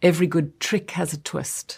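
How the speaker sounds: put-on South African accent. Discussing south african vowel sounds with another speaker, quoting a line in south african accent. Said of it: "with the E sound in South African".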